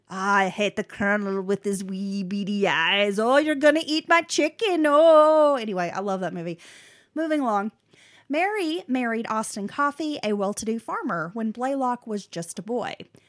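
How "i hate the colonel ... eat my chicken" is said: put-on Scottish accent. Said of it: "Bay City Rollers, and he's like".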